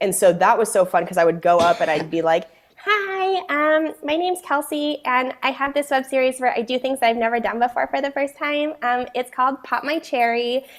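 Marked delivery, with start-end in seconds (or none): 2.8-10.6 high, sexy airhead voice.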